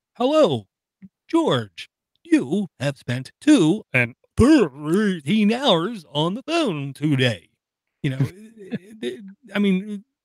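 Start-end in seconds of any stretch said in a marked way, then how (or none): 0.2-7.5 sing-song, artificial phone-app voice faking human. Mocking an app that pops up on a phone, in a stupid fake human voice. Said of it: "in a stupid fake human voice".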